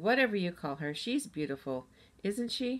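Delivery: ordinary delivery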